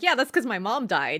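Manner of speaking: breezy, offhand, matter-of-fact manner. Retelling a character's reply about chores: imitating a nonchalant reply. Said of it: "Tamaki nonchalantly is like".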